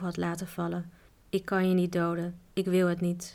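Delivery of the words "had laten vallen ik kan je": usual speaking voice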